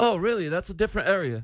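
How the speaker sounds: put-on British accent, badly done. Making small talk with another player in a group scene: bad british accent. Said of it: "Our accents suck".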